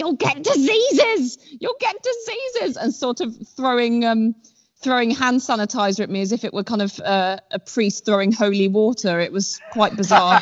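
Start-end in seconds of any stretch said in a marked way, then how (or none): 0.0-2.8 high-pitched mock scream. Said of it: "my partner screaming at me".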